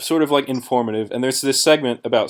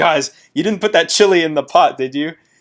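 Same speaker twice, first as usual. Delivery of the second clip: loud raised yelling; 5 semitones higher, 5 dB louder than usual. Retelling how someone came back yelling at the group: imitating someone yelling. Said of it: "he's yelling".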